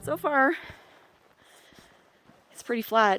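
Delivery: winded, short-of-breath talking. Speaker talking at high elevation, out of breath. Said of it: "I know I sound out of breath".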